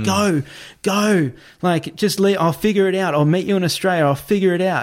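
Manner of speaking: mock teary, insistent, urgent pleading tone. Retelling a man at the airport urging a woman to go, imitating tearful urging. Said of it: "He's now got tears in his eyes".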